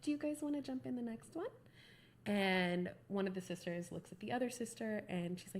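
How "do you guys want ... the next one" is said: sweet, polite, high customer-service voice. Trying to be really nice to customers, put-on nice customer service voice. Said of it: "my Susie customer service voice on".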